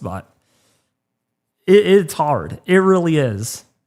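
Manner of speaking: holding back tears, fighting to keep composure. Streamer telling viewers how seeing people suffer hurts, holding back tears. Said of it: "I'm not trying to cry out stream".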